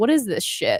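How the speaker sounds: outraged, indignant outburst of disbelief. Retelling having toothpaste confiscated: retelling own outraged reaction. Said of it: "and I was like".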